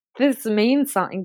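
ordinary delivery

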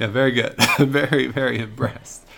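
breathless, laughing through the words.

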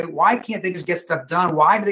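plain

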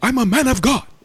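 put-on yell, very high. Retelling an argument with a man about the church; mimicking a man's raised tone. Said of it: "He's kind of getting a little tone".

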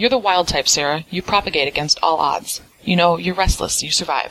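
ordinary talk

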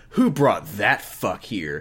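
revolted, disgusted tone kept quiet to oneself. The listener reacts to Brock, trying to keep it private; disgusted voice. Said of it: "You say in a disgusted voice".

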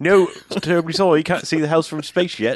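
strange put-on British accent, a bit high. Retelling a scene from a movie being discussed: Kal Penn's weird British accent. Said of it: "he's got a weird British, British accent".

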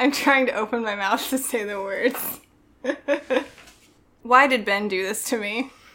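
breaking up, giggling through the words. Trying to read a poem aloud for others: getting the giggles. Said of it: "Sorry, I'm getting the giggles".

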